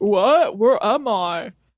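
very slow, dragged-out voice. Doing an impression of the other speaker: impression of the other speaker. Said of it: "now this is an impression of you".

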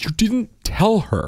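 put-on very high, drawn-out upset child complaint. Retelling how an upset son complained: imitating an upset child. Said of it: "Bren really got upset".

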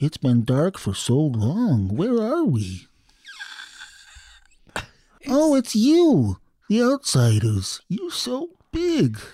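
tiny, high mushroom-man creature voice. Tiny mushroom men poke out of the dirt and speak to the outsiders: tiny mushroom-man voice. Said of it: "this little voice says".

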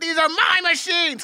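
forceful but contained, firm controlled shout. Recalling a line sound played over and over on set, imitating a controlled yell. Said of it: "he's yelling".

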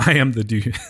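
words broken up by giggles, talking through laughter. Reading out a submitted line, laughing while talking. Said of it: "I can't even say it without laughing".

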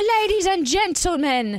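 put-on British accent, pitched very high. Introducing a DJ set as a hype announcer: put-on British accent. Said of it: "Why am I speaking in a British accent?".

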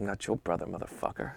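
barely audible, whispered, under-the-breath grumble. Retelling a golf story, quoting a man: imitating someone muttering. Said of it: "And the guy mutters".

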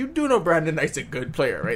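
ordinary delivery

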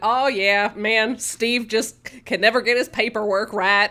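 put-on easygoing, rambling Deep South Southern accent. Recapping a scene where a man rambles while switching out a machine, Deep South accent. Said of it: "Deep South".

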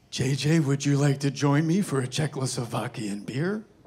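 put-on gruff movie star voice. Retelling an invitation at the end of a shoot: Clint Eastwood voice. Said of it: "I hear Clint Eastwood go".

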